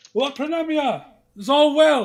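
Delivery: shrill, very loud, high-pitched shout. Voicing guardsmen approaching who call out to a lord: guard calling out. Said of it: "as they say".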